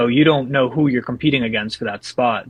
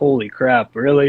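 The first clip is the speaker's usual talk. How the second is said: ordinary talk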